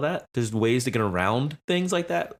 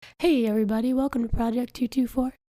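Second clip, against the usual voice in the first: very high, silky, smooth buttery voice; 12 semitones higher than usual. Trying the show intro again as suggested, in a buttery voice. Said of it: "try it in a buttery voice".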